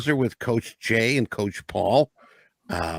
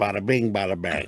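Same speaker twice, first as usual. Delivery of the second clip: fake sexy Chicago accent, lower pitch; 4 semitones lower than usual. Joking after another speaker's voice is praised: put-on sexy Chicago voice. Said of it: "I got a Chicago sexy voice".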